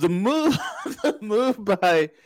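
talking through laughter. Starting a point after calling people morons: laughing while talking. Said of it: "I'm sorry that I'm laughing this morning".

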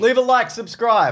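loud yell at a very high pitch. A podcast co-host wrapping up the segment, yelling. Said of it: "Why are you yelling?".

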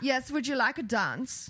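put-on German accent. Suggesting a russian persona for a friend, in an accent that comes out german. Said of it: "that's more German".

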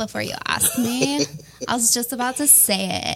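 put-on California Valley Girl voice. Telling Josh they were about to say it, in a Valley Girl voice. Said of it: "It's my Valley Girl voice".

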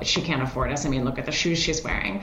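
ordinary talk

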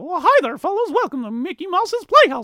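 very high and loud voice with swooping pitch. Speaker lists cartoon voices they remember, doing a Mickey Mouse voice. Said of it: "Mickey Mouse is like".

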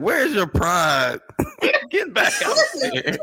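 very high, very slow, drawn-out swooping yell. Describing watching the game: imitating screaming at the tv. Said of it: "I'll be screaming at the T V like".

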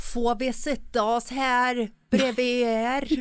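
Swedish Karlstad dialect. Imitating dialects on request in a podcast segment, in a bad put-on Karlstad dialect. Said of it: "Kör en Karlstad-dialekt då".

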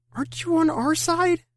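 very high, drawn-out, slow pleading. Reading a story aloud, a tied-up character appeals to his captor: appealing. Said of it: "I appealed".

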